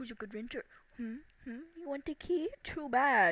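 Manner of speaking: play-acted teasing, taunting tone. Complaining about a woman holding the key over them, mimicking her: mock-teasing, like talking to a dog. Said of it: "She's like".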